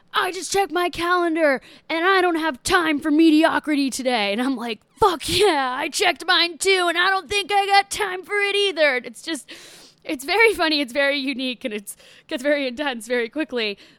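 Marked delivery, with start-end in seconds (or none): 0.2-4.4 loud, screaming, motivational workout instructor voice. Describing a home workout video, imitating the instructor screaming at the speaker. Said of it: "she's screaming at me and she's like".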